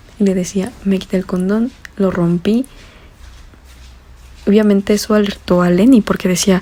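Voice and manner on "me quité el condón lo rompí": ordinary talk, nothing marked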